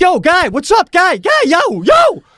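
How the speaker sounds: put-on very high, swooping, drawn-out yell. Telling a story about a ride going too fast, retelling a yell. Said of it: "I yell at the Mexican".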